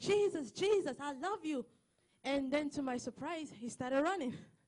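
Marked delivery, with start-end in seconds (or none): 0.0-1.7 put-on, eager, excited yet mild calling out. Speaker recounting running outside after someone who kept walking, retelling an excited shout. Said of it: "I ran outside and I shouted".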